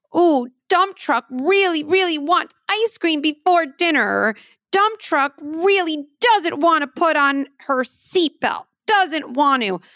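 playful, high, slow little toy truck voice. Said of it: "start a narrative in play like this".

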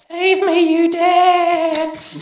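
tiny, very high-pitched, far-off distant cry. Narrator voicing a tiny voice undercutting a grand moment, tiny distant yelling voice. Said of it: "a tiny, distant voice yelling".

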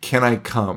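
put-on like a little kid. Retelling a man asking to join the group: imitating a childlike voice. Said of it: "in like the most childlike".

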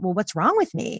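ordinary talk

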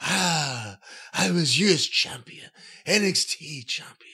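mock breathless, out-of-breath wrestler voice. Imitating a wrestler who is always out of breath, breathless voice. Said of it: "romantically sell you tequila in another language".

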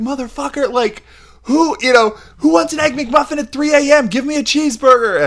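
mock very high, cranky, worn-out yelling. Retelling yelling at the guy at the drive-thru: retelling own yell. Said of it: "I yelled at the guy at the drive-thru".

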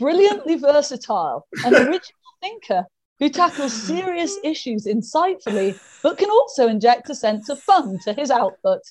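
speech broken up by laughter and giggles. Speaker reading out the listener's nomination bio, laughing while reading. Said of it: "i can't even say this without laughing".

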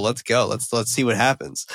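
ordinary delivery

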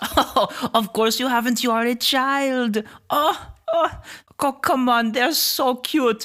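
speech mixed with laughter. Voicing a creature who examines wings with interest: laughing creature. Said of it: "She laughs".

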